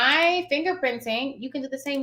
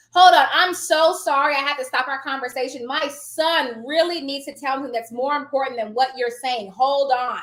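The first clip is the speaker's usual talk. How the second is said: ordinary talk, nothing marked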